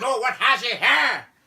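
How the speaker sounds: put-on sing-song Belfast accent, very high and loud. Retelling what a man in Belfast said: imitating a Belfast accent. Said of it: "it's very melodic as an accent".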